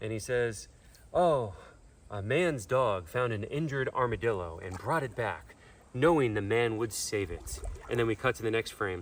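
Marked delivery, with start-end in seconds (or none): 1.1-7.6 put-on gentle, kind elderly Southern man's narrator voice. Describing a video, mimicking its AI narrator: kind old Southern man voice. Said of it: "the A I sounds like a like a kind old Southern man".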